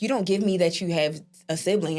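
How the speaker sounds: ordinary talk, nothing marked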